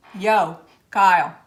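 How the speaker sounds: put-on tried New Jersey accent. Told the accent is needed, the speaker tries it out; attempted New Jersey accent. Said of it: "You need that Jersey accent. / let me try".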